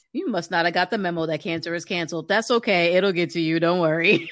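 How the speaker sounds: plain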